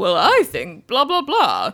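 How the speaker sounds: sophisticated man voice with swooping pitch. Imitating how the narrator voiced Archie, in a sophisticated Archie man voice. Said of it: "the Archie man voice was a little more sophisticated".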